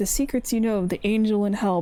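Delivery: ordinary delivery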